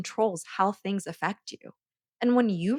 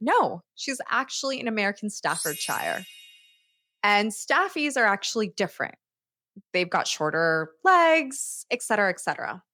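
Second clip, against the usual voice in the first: ordinary talk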